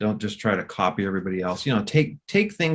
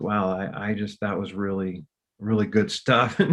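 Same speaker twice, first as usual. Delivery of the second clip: ordinary talk, nothing marked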